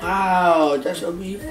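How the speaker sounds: flat, level monotone, no lift, first word drawn out. Answering a question about a product just shown: monotone. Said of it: "Marky be so monotone".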